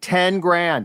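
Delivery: ten grand said slow, deliberate, drawn out. Reading a sponsor ad, pausing to say the amount slowly. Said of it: "I'll say it slow because it's staggering".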